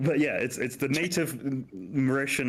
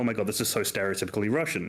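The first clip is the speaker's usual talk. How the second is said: plain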